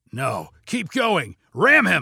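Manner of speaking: yelled, swooping, drawn-out shout. The hijacker answers Colby as a car blocks the truck's path, shouted. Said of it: "shouted the hijacker".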